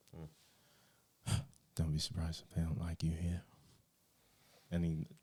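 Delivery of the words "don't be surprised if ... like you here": whisper, faster. Game master voicing a character who turns and whispers to Kane. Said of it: "he whispers to you".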